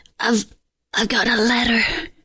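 hoarse, raspy delivery. A role-play player speaks in character to a fellow player, in a raspy voice. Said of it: "with a raspy voice I say".

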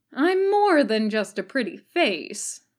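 drawled delivery. After a long silence, Ryoma finally answers Kakashi, drawling. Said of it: "flat look and finally drawled".

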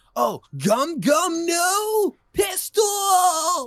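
very high, very slow, loud, stretched-out call. Talking about English anime dubs and showing how the dub sounds: English-dub Luffy voice. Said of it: "you can imitate it that well".

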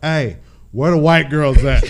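high, very loud yell at the top of the lungs. Recounting walking into a party, retelling a shout at top of lungs. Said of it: "at the top of my lungs".

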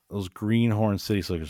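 ordinary talk

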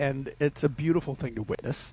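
low, dry, sarcastic tone. Talking about how people treat each other, sarcastic. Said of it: "I'm being sarcastic".

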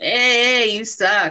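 pushy, bossy tone with drawn-out hey. Describing loud inner voices of self-doubt, the speaker mimics one: imitating a bossy inner voice. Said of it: "They're like all like bossy".

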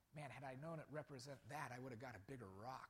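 hushed, quiet half-whispered aside. Retelling what a kid half-whispered to his leader: imitating a half-whisper. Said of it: "and he whispers".

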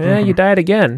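mock casual tone. Imitating game characters who say harsh things calmly: imitating a nonchalant threat. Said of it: "saying all these things very nonchalantly".

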